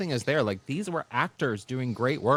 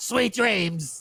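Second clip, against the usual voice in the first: throaty, guttural voice pushed up high; 8 semitones higher than usual. Quoting a character's line after praising how she says it, guttural Sophia imitation. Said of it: "her voice gets sort of like guttural".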